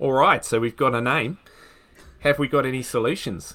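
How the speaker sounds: speaking in an Australian accent. Working through a puzzle with the others after naming the writer, in an Australian accent. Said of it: "in your Australian accent".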